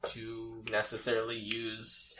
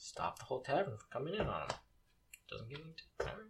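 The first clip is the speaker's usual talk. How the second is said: muttered under the breath, much quieter; 3 semitones higher, 7 dB quieter than usual. A game master voicing a man grumbling as the players walk away, mumbling under his breath. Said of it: "You hear him mumble under his breath".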